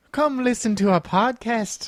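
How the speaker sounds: terrible fake Irish accent. Podcast hosts joke about an irish podcast, doing a terrible irish accent. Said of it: "I did a terrible impression".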